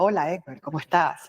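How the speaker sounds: affected, put-on radio announcer voice. Contrasting naturalness with talking like an announcer, in a put-on announcer voice. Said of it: "No impostar la voz o querer hablar así como una locutora".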